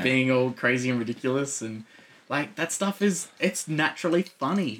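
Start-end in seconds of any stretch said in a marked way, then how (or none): none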